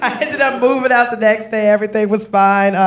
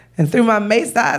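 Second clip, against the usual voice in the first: plain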